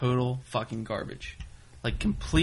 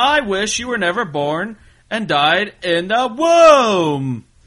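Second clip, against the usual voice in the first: high, slow, loud mock inflection on wrong word. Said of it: "they put inflections on the wrong word".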